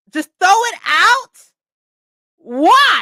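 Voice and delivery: very loud, high shout with "why" drawn out. In the middle of a conversation with others, yelling. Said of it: "I'm so sorry for yelling".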